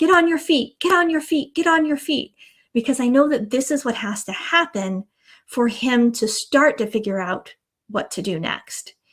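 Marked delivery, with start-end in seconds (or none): 0.0-2.4 insistent repeated shout, pitched up. Retelling watching a kayaker in rushing water, speaker repeats what they yelled: retelling a yell. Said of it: "I'm yelling".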